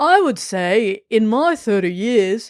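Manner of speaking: slow, deliberate, drawn-out Australian accent. Reading a quote aloud, slipping into an australian accent. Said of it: "it's still Australian".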